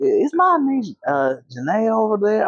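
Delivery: put-on little country accent. Retelling what an uncle said when he called in: little country accent. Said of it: "I can do country accent".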